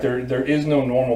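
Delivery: ordinary delivery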